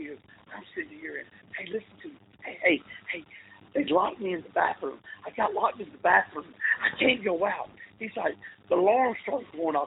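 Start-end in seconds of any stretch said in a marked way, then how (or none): 0.5-7.7 whisper-yelling, loud but whispered. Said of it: "whisper yelling into the phone".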